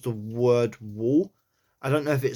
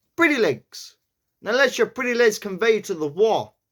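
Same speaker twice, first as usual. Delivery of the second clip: put-on New York accent, pitched up; 8 semitones higher than usual. Practising accent work on a line, trying it in a new york accent. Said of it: "like a New York accent".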